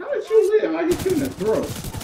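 very high, loud, shocked yelling in disbelief.

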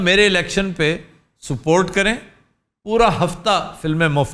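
normal talking voice

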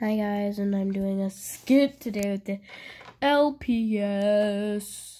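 dull, bored, flat put-on monotone. Introducing a skit with the LPS to viewers, in a boring voice. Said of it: "why am I doing a voice that's really boring".

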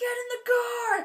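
put-on screaming voice. Speaker recounts a sketch where a dad yells at his kids; Adam Devine screaming. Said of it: "he's screaming at his kids".

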